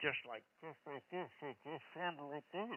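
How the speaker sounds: mock muffled, turned-away speech. Showing how a woman sounded turning her head from the mic, imitating a muffled voice. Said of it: "she would go muffled".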